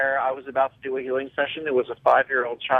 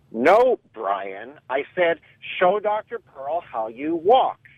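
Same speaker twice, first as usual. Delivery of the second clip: suddenly stern, drawn-out motherly voice; 3 semitones higher than usual. Retelling a mother suddenly addressing little Brian, imitating a stern mother. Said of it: "the mother's voice suddenly turns uncharacteristically stern".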